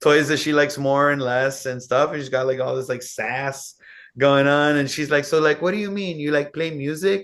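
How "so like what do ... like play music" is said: put-on Miami accent. Retell a sassy girl's question about you playing music, imitating a girl's thick Miami accent. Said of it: "she has a really thick Miami accent".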